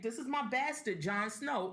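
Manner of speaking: usual speaking voice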